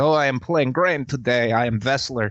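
put-on Russian accent. Retelling jumping onto a convention table in character: Graham voice in Russian accent. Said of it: "Just the Russian accent".

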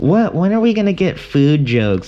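put-on voice of a Midwestern woman. Describing a comedian's bit, imitating a midwest woman audience member. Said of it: "the impression of the Midwest woman audience member".

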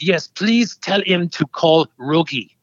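put-on heavy, laid-on-thick French accent. Recalling a phone caller leaving a message for Nicholas, in a heavy French accent. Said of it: "very heavy French accent".

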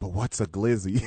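mock hushed, discreet tone. Retelling how Hawk leaned over in a loud room: imitating Hawk asking discreetly. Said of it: "he was trying to be discreet".

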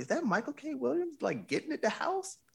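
very high, amazed disbelief. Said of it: "And everybody's like".

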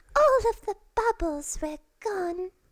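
drawn-out moan, very high in pitch. Imitate Keira Knightley's character in a film, in a Moaning Myrtle voice. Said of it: "sounds suspiciously like Moaning Myrtle".

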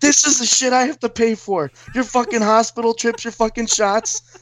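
very high, distant yelling. Acting out the dad yelling at the speaker from a distance, imitating dad yelling. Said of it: "He's just yelling at me from the distance".

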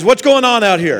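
put-on deep baritone voice. Retelling how a preacher father came out asking what happened: imitating dad's baritone voice. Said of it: "He has that baritone voice".

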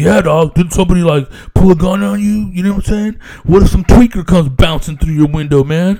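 relaxed, casual talk. Retelling what the neighbor asked, imitating the neighbor's way of talking. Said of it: "and that's how he said it".

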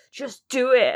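very loud, grumpy, sulky bark. Retelling talk show appearances, imitating grumpy Spike Lee. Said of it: "so grumpy in his tracksuit bottoms".

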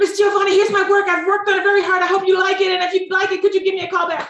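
very high, nervous, nonstop rattled-off rush of words. Recalling handing over work as she leaves for her plane, imitating own fast talking. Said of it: "I'm talking so fast".

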